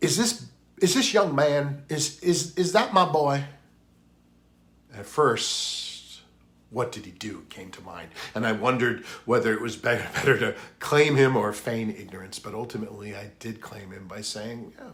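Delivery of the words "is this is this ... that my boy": high, raised, amateurish put-on Southern accent. Speaker retelling what a woman who found him in the store asked, Southern accent. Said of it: "using the best Southern accent available within my skill set".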